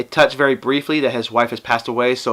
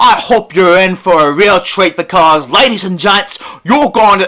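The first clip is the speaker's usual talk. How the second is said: bad Cockney accent, loud and high; 6 semitones higher, 7 dB louder than usual.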